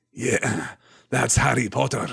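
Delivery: slow, gruff, growling voice. Narrator reading a line spoken from behind the students, growling Mad-Eye Moody voice. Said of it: "said a growling voice".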